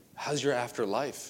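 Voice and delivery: soft, hushed stage whisper. Acting out own past awkward Jesus conversation: retelling own past half-whisper. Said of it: "Why did I whisper?".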